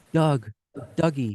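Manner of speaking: small, tiny little calling voice. Standing outside on the grass, retelling hearing someone call out: retelling a tiny voice. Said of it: "I hear this tiny voice".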